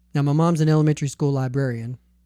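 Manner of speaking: ordinary talk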